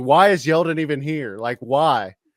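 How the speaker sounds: loud hollering and screaming. Fan recalls watching the championship game, retelling screaming at the tv. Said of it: "I'm screaming at the T V".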